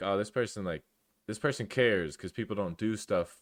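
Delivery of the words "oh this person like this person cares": ordinary talk, nothing marked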